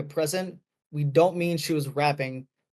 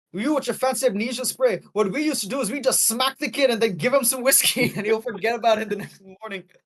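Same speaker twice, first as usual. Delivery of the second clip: put-on Scottish accent, higher pitch; 7 semitones higher than usual. Quoting a favorite joke line from a character, in a Scottish accent. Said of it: "I'm doing a, s- a Scottish accent".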